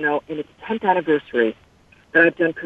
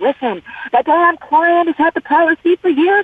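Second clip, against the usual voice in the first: mock scream, higher; 12 semitones higher, 4 dB louder than usual. Retelling a complaint to insurance companies: imitating her own screaming. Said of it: "I'm always screaming at them".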